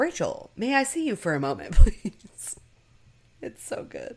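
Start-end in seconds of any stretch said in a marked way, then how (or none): 0.0-2.5 put-on, very loud, booming, stern, swooping bossy voice. Retelling a scene, the speaker quotes a man calling rachel in, imitating a boss-like tone. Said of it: "in a very boss-like tone".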